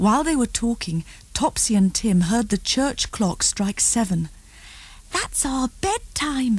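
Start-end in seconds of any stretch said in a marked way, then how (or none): 5.1-6.6 hushed, breathy, soft half-whisper. Narrating Topsy speaking to Tim as the church clock strikes, half-whispered. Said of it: "whispered Topsy".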